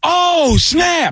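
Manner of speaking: very high, surprised exclamation. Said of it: "one of 'em goes".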